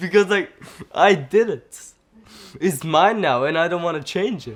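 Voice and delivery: loud declaration, laughing through the words. After mixing up Turkish words into a wrong sentence, speaking while laughing.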